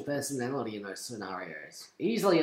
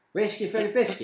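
put-on higher old man voice; 7 semitones higher, 4 dB louder than usual. Repeating the catchphrase after being asked about the voice, in an old man voice. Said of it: "now I'm an old man".

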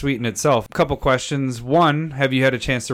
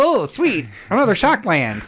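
mocking put-on nerdy voice, higher pitch; 8 semitones higher than usual. Mimicking the other speaker opening a box of cards: Conan O'Brien nerd voice. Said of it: "Conan O'Brien nerd voice".

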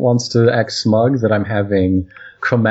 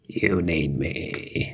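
put-on frog voice, lower and quieter; 6 semitones lower, 11 dB quieter than usual. Chiming in after another speaker, in a frog-like Palpatine voice. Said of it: "That was a nice... little frog voice".

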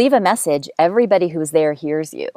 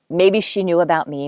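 ordinary talk

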